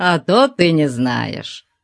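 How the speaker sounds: laughing while speaking. A giant of a man answers a young woman's question, laughing. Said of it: "Засмеялся он".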